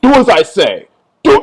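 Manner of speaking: mock bossy, power-tripping tone. Retelling a man's demand to take off a shirt: imitating a power-tripping order. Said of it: "like a big power trip".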